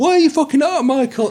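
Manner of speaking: very high, shrill screaming yell. Retelling how he reacts to mistakes while recording at home: imitating screaming at himself. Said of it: "I'm screaming at myself".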